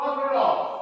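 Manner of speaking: loud, high-pitched shout.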